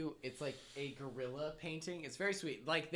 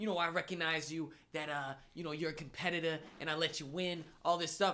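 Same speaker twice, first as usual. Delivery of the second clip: put-on Boston accent, casual relaxed talk; 3 dB louder than usual. Retelling what a competitor said two days later, in a Boston accent impression. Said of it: "this is his Boston accent".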